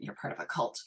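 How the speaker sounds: put-on muttering under breath. Retelling what mom said about veganism: imitating mom muttering under her breath. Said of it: "under her breath go".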